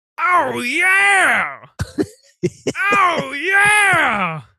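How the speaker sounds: each yeah very high and drawn out. Asking the other speaker what they think, doing a Dr. Teeth voice. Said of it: "I want to do my Doctor Teeth".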